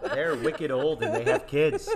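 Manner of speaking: best-attempt put-on mock Canadian accent. Speaker describes older colleagues at their school, in a best-attempt Canadian accent. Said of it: "I'm doing my best Canadian accent".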